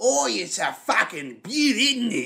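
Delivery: exaggerated, thick Australian accent, high and slow. Describing a trailer scene where Kano rips out Reptile's heart; Kano's exaggerated Australian accent. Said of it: "he's super fucking Australian".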